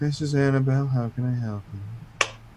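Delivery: sleepy, drowsy, half-awake voice. Voicing Annabelle answering a transferred phone call: sleepy Annabelle voice. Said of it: "you get this very sleepy".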